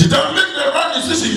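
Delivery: fast, high-pitched shout.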